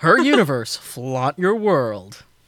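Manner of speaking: deep commercial announcer voice. A host does the line live on the show in announcer voice. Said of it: "you don't want me to do my announcer voice live?".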